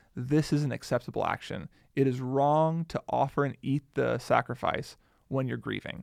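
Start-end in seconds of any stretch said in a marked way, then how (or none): none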